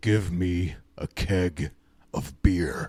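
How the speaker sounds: very slow, deep, drawn-out wolf-man voice. Telling a story during a ball game, the wolf man asks the shopkeeper, wolf voice. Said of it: "asks him in his wolf voice".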